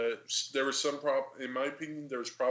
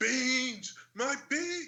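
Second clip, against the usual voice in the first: very high, flipped-out outburst, losing it completely; 12 semitones higher than usual. Retelling a game scene where a drug dealer spills his beans: imitating a character flipping out. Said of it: "he just flips out because of his beans".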